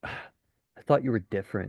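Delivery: expressionless, dead-level monotone, deadpan and flat. Acting out a guy's reply after a girl says she prefers vanilla, deadpan. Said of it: "You look at her deadpan".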